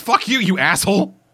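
high, all-out, abusive-sounding scream. Summarizing a story where Hibiki screams at God, imitating Hibiki screaming at God. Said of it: "just screaming at God".

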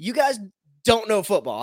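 high-pitched, loud, carrying shout. At a football game, retelling shouting at people whining at the refs. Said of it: "I just shouted over there".

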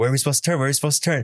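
high, insistent yell. Recounting how dad yelled at the speaker about where to turn, retelling dad's yell. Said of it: "he's like yelling at me".

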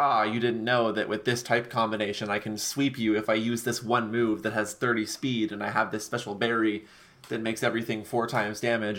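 ordinary talk

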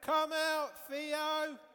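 shrill, booming, loud, high-pitched shout. Calling out with children to wake a puppet: shouting loudly. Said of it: "Let's shout again".

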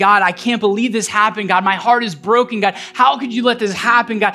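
ordinary delivery

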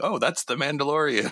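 acted-out, high, blurted-out yell. Imitating a visiting relative on the couch: imitating a yelling relative. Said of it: "they just start yelling".

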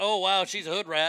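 ordinary delivery

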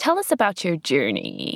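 put-on creaky valley girl voice, swooping vocal fry. Podcast hosts show how they open each episode: Valley Girl vocal fry. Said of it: "we've put on our best Valley Girl vocal fry".

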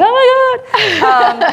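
high, slow, drawn-out starstruck gasp. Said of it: "I'm like".

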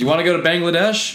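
mocking, high-pitched, loud, taunting voice.

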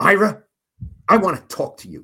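loud, high-pitched, very angry. Retelling a player's demand at lunchtime: imitating Jerry Rice sounding pissed. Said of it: "Really pissed".

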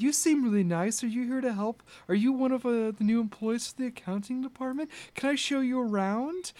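soft, high-pitched, earnest, very sincere voice. In a game, voicing Octavia greeting a newcomer to the accounting department, extremely sincere. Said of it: "grappled by the extreme sincerity of this character".

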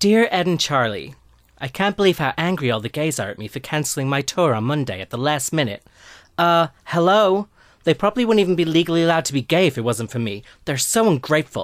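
put-on accent blending American and British vowels. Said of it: "try and do something in between".

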